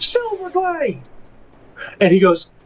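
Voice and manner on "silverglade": shrill, piercing, much higher. Narrating a scene, voicing a familiar figure calling out, in a shrill voice. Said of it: "a very familiar shrill voice kind of say".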